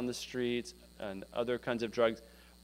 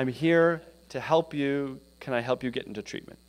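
imitated stutter, said louder; 4 dB louder than usual. Retelling a case manager offering a woman help, imitating someone stuttering. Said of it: "He's stuttering. He's having a hard time".

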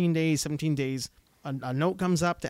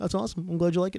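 put-on insincere gushing tone, higher pitch; 3 semitones higher than usual. Retelling how praise comes out when talking about the gym: imitating own insincere praise. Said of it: "I'm being super insincere".

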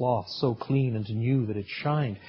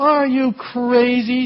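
shrill, very high, loud contemptuous sneer; 13 semitones higher, 10 dB louder than usual. A man leaning on a pole answers the ragman's question, sneering. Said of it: "sneered the other".

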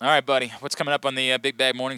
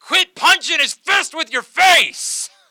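put-on very loud, very high, drunken yell; 8 dB louder than usual. Retelling a heckle someone yelled at a fight night, retelling Bachman's drunk yell. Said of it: "Bachman yells out all drunk".

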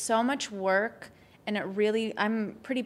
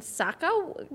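pitched-up word drawn out, sinking into creaky vocal fry; 7 semitones higher than usual. Showing how to end the word: vocal fry at the end. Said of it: "vocal fry at the end".

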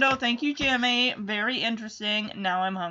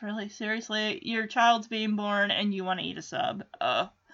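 plain

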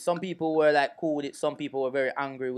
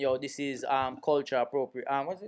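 usual speaking voice

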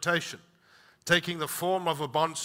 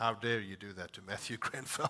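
very low, very quiet, deep put-on voice; 7 semitones lower, 11 dB quieter than usual. Speaker tells a family card-game story, quoting a kid; putting on a different voice. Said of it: "He goes in a different voice".

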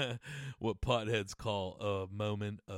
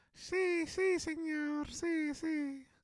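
put-on very high, tiny little child's voice. Recalling men who did little kid voices, the speaker imitates a little kid voice. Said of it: "dudes doing those little kid voices".

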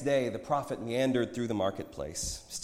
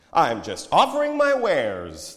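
very loud, drawn-out, booming sing-song salesman voice; 3 semitones higher, 8 dB louder than usual. The prophet answers his friend's challenge in front of others: mock salesman voice. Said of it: "in his mock salesman voice".

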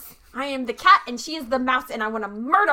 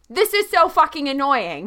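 openly annoyed, irritated, put-upon tone. A player announces annoyance while attacking in a game, very loud, annoyed. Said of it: "very loudly".

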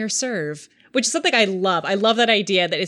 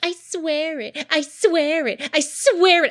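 high, slow, taunting, mocking echo of words; 7 semitones higher than usual. Retelling a man mocking a woman's last three words, mocking her tone. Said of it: "starts mocking her final three words and her tone".

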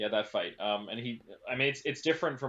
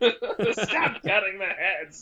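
put-on yell, much higher and louder; 10 semitones higher, 7 dB louder than usual. Picturing the character yelling at Godzilla from his perch, Danny DeVito impression, yelling. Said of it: "My best Danny DeVito".

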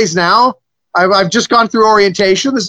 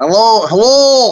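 put-on Scottish accent; 2 semitones higher than usual. Speaker answers with a hello, scottish accent. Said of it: "That's Scottish, isn't it?".

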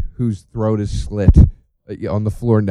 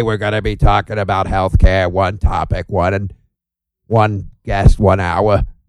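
demon voice like a smoker woman; 3 semitones lower than usual. Joking about being possessed while hosting the podcast, in a demon voice. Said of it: "That's my demon voice".

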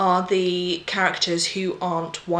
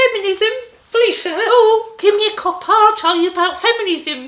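put-on little boy voice, very high and loud; 9 dB louder than usual. Speaker mocking how the other speaker says a word, in little Victorian shoeshine boy voice. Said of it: "Don't make it sound like you're a little Victorian shoeshine boy".

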